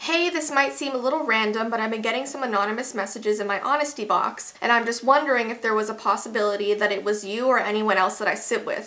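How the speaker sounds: plain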